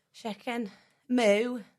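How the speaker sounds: put-on cow voice, Scouse accent. Asked what a Scouse cow would sound like, answering in a Scouse-accent cow voice. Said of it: "What would a Scouse cow sound like?".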